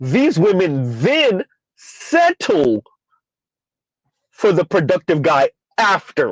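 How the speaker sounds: slow, deliberate, careful read, word by word. Speaker rereading a comment from Vince aloud, slowly and deliberately. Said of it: "Let's say that again slowly".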